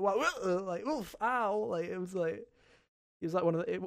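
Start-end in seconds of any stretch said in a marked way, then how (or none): 0.0-1.6 very slow, high, unconvincing pain cry. Mocking a game character's line after hitting his head, imitating a cry that doesn't sound hurt. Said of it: "it doesn't even sound like he was hurt".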